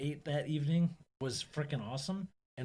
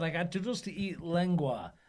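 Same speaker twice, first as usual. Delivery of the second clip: ordinary delivery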